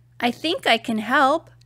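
ordinary delivery

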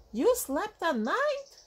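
astonished, very high gasping. One bat in a crowd questions Stellaluna about her story, gasping. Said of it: "Gasped another".

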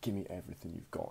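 low, menacing mutter under the breath. Retelling how a man holding a knife demanded everything, in a low voice so no one hears. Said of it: "he said it really like low in his voice so no one would hear him".

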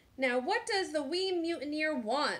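demanding, insistent, pressing tone. Narrator reads the pirate Braidbeard's line about the baby, demanding. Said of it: "Braidbeard demanded".

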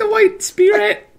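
very high, fast, mock sympathetic coo. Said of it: "and I was like".

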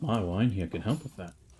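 secretive, leaning-in conspiratorial tone. Voicing a character offering wine to a goblin player: conspiratorial tone. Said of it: "He leans in conspiratorially".

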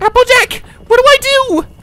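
very high, very loud, shrill, frantic, panicked shriek. Held up from falling, eyes squeezed shut, she shrieks to a friend: panicked shriek. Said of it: "Twilight shrieked in a panic".

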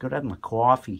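New Yorker's way of talking. Speaker saying they need their coffee the way they'd say it in New York, New York accent. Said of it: "as I say in New York".

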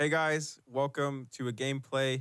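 flat, dull, unenthusiastic, low-energy delivery. Opening a gaming video when the team says go: flat, unenthusiastic. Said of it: "more enthusiasm. I need to hear it in your voice".

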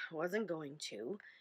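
grumbling mutter. A father replies after being told he won't get anything else: grumbling. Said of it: "he grumbled".

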